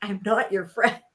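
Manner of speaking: eerie, creepy, small-sounding voice. Recounting a scene, quoting what she said in a creepy little voice. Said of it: "her creepy little voice".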